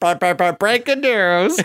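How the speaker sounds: put-on high, slow old-time newsreel announcer, 1920s radio style.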